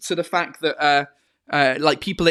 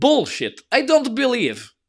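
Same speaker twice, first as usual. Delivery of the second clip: put-on very thick, heavy Russian accent with swooping pitch; 8 semitones higher than usual. Retelling what he would say when told something fake, very Russian accent. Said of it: "in his very Russian accent".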